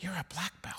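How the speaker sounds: very hushed, teasing whisper. Retelling a remark made while watching a routine: imitating Gail whispering. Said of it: "leans over to me and whispers".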